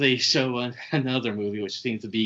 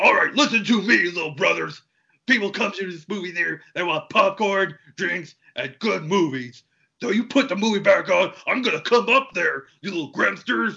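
pitched-up, yelling tirade; 8 semitones higher, 3 dB louder than usual. Retelling a movie scene, yelling up to the projection booth: imitating Hulk Hogan yelling. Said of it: "starts yelling to the projection booth".

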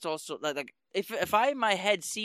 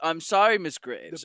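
exaggerated American accent, louder; 5 dB louder than usual. Quoting a scene, imitating Bruce Wayne's ultra American accent. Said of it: "an ultra American accent".

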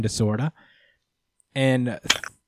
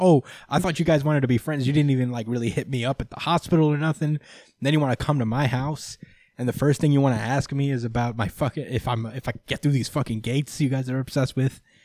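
ordinary talk

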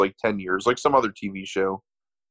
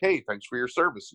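plain

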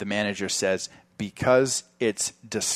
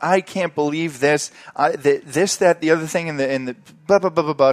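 mock freak-out, woman's voice, higher, louder; 7 semitones higher, 8 dB louder than usual. Retelling a customer losing it at the manager: imitating a woman freaking out. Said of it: "She starts freaking out".

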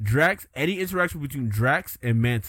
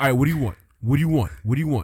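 put-on street-slang voice, louder; 4 dB louder than usual.

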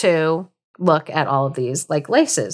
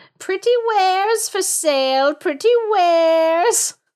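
put-on very high old woman voice calling out, words drawn out; 12 semitones higher than usual. Storyteller voices the Evil Queen at the dwarves' door, Evil Queen calling out wares. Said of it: "I hope you enjoyed my voice".

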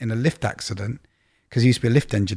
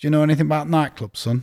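put-on strong Yorkshire accent; 4 semitones higher than usual. Retelling phoning Vincent from an application: Vincent's strong Yorkshire accent. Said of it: "he had a strong Yorkshire accent".

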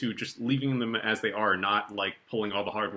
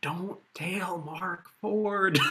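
very slow, high-pitched, strong Southern drawl; 9 semitones higher than usual. Retelling what a grad student always said: Southern drawl imitating John Roberts. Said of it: "had this great Southern drawl".

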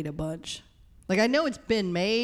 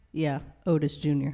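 bone-dry, low, flat deadpan, acted out; 4 semitones lower than usual. Quoting a movie character's answer about his name: imitating OJ's deadpan reply. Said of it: "so deadpan".

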